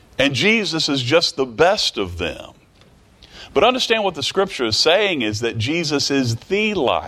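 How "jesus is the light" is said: extra weight placed on the word "the". Explaining what a scripture is saying, with stress on 'the'. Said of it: "A little bit more emphasis on the word the".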